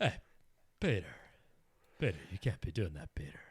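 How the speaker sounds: fast character voice with pitch swooping around. Joking about a third voice, doing a Joe Swanson voice. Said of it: "it's just a Joe Swanson".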